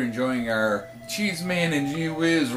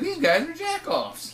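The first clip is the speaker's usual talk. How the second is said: mock fan voice, high, slow, sneering, disgusted. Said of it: "they're gonna hear this and be like".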